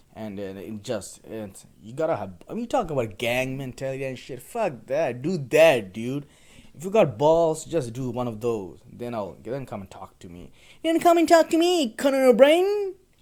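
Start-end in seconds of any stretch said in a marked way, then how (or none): 10.8-12.9 very high, loud, swooping nerdy voice. Mocking anyone afraid of the fire ant glove: Conan O'Brien nerd impression. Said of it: "my Conan O'Brien nerd impression".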